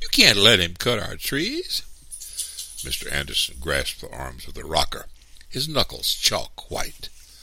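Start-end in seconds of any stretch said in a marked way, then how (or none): 0.0-1.8 loud, high cried-out exclamation. Reading a story, the narrator leaps onto the porch: crying out. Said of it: "I cried".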